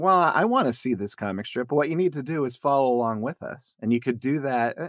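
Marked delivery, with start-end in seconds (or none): none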